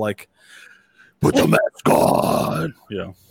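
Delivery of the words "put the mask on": slow, drawn-out, strained mock metal scream. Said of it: "He starts screaming in a metal".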